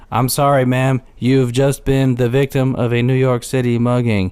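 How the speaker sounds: put-on flat monotone voice. Retelling a character's line to a mugging victim; imitating a monotone voice. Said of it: "he's saying it like all like monotone".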